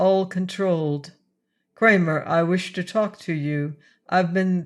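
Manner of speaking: ordinary delivery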